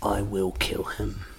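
low, cold-blooded hushed mutter. Repeating a man's threat about someone, in a mock Kray twins cold-blooded threat. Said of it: "he said it in like a cold-blooded Cray Twins".

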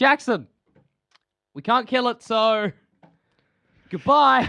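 long, high, drawn-out hollered yell. Saying goodbye to Jackson from inside the crocodile, yelling. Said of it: "Why are you yelling?".

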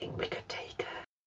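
hushed, whispered aside. Whispering to another character during a tense escort. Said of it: "I'm gonna whisper to Florence".

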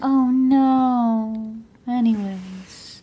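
put-on flat, toneless monotone. Retelling a woman's reaction, in a flat monotone. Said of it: "They both talk monotone".

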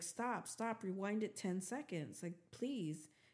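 ordinary delivery

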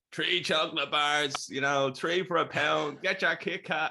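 put-on very broad Dublin accent, pitched high. Retelling old ladies selling chocolate outside the football grounds, strongest dublin accent. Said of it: "like in the most Dublin accent ever".

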